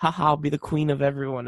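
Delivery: ordinary delivery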